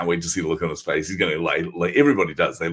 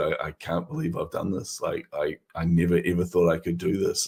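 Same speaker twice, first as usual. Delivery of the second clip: mimicked crying, tearful words. Retelling how a man burst into tears, the speaker voices him imitating someone crying. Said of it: "burst into tears and just said".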